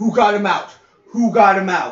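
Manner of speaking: loud, high-pitched yelling. Recounting a kid rushing back in and seeing Mark out, retelling a kid yelling. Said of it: "he starts yelling".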